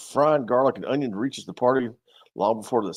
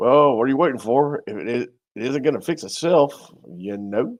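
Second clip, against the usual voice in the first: put-on American Southern accent throughout; 4 dB louder than usual. Reading a wagon story aloud, voicing a character in a Southern accent. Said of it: "a Southern accent".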